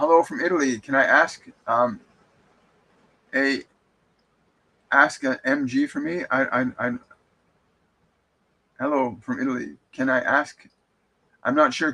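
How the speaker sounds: plain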